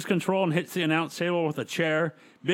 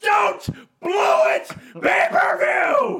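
mock male yelling, much higher and louder; 8 dB louder than usual. Recounting a wrestling promo, acting out Arliss yelling. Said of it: "So we just have Arliss yelling".

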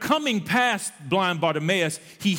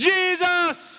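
very high, loud, drawn-out holler; 10 semitones higher than usual. Speaker retelling Bartimaeus calling out to Jesus: imitating Bartimaeus's louder shout. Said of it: "The Bible says he got louder".

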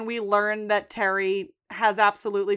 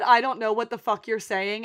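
ordinary talk

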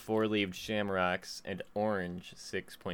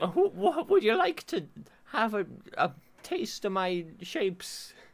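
put-on leprechaun voice, much higher and louder; 12 semitones higher, 6 dB louder than usual. During an ad read for the cereal, in a Lucky leprechaun voice. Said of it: "He's a leprechaun".

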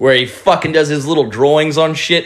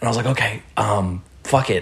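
hushed whisper, quieter; 4 semitones lower, 7 dB quieter than usual. Telling a story about friends urging a Paris trip, whispering. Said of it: "I don't know why I'm whispering".

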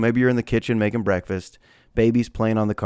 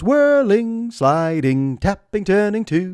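very high British lady voice, toy-style; 9 semitones higher than usual. Parent imitating the baby's battery-powered toolbox toy, British lady's voice. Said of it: "the British lady goes".

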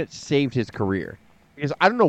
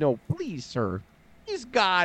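put-on pleading voice, higher and quieter; 5 semitones higher, 7 dB quieter than usual. Acting out Paul Heyman begging Vince for the reins: imitating Paul Heyman pleading. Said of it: "So Heyman's like".

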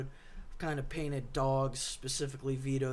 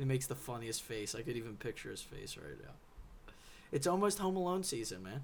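plain

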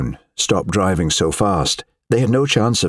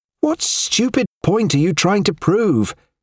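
very high, shrill hectoring snap, near hysteria; 12 semitones higher than usual. A woman snaps at a silent man, shrill and hectoring. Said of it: "She had snapped at him in a shrill, hectoring tone".

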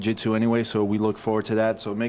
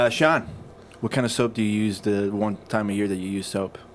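ordinary talk

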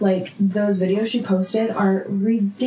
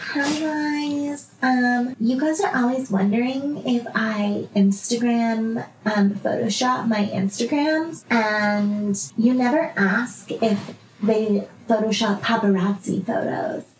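put-on baby voice. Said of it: "in this fucking baby voice".

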